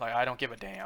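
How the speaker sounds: cracking voice. Complaining about someone's no-locked-doors rule, voice cracking. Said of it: "voice crack".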